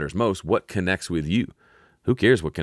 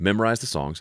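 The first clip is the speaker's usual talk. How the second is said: ordinary delivery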